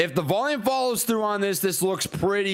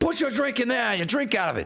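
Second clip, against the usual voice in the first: bad, terrible fake Australian accent; 3 semitones higher than usual. Retelling what someone said while handing over a shoe: terrible Australian accent. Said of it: "Terrible, terrible accent".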